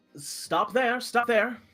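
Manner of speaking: put-on high halfling girl voice. Voicing a halfling girl who stops an arriving adventurer: halfling girl character voice. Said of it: "a halfling girl kind of walks up to you and says".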